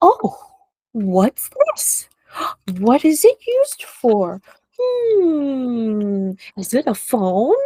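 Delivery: slow, playful, pretend-curious voice full of wonder. Showing how you distract small kids, speak in a playful pretend-curious voice. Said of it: "pretending and making interesting sounds".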